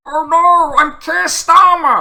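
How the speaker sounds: exaggerated dismay, very high, loud, drawn out. Acting out waking up and realizing who he is, exaggerated Keir Starmer impression. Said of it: "This is my impression of Keir Starmer waking up".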